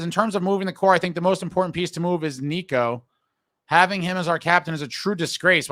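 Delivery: ordinary delivery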